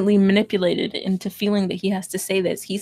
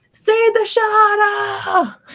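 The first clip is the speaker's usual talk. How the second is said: very high-pitched yelling; 12 semitones higher, 5 dB louder than usual. Acting out a sheikh in the story yelling at a dying boy: yelling in someone's face. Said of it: "he's yelling in his face".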